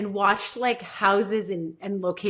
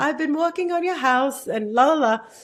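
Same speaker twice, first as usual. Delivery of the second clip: laid-on, put-on British man's accent, pitched up; 7 semitones higher, 4 dB louder than usual. Speaker imitates a british man, in a british man's accent. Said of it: "like a British man and it's like".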